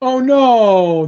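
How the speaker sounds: put-on sad voice. On a podcast, reacting to the co-host's sad news, in a sad voice. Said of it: "This is my my sad voice".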